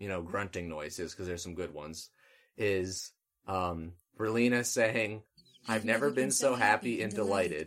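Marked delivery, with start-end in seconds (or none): none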